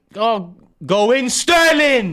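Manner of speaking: very high, very loud, drawn-out superhero battle cry. Urging a player on while watching a match: superhero shout. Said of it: "like a superhero shout".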